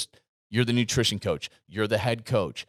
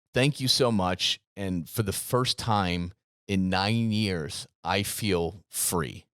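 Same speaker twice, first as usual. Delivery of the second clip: plain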